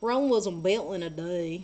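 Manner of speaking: exaggerated, odd put-on country bumpkin voice. Talking about having to draw more for a game, in a weird country bumpkin voice. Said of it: "Why did I say that in a weird country bumpkin voice?".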